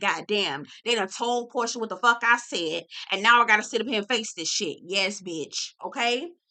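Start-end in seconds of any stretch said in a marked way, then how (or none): none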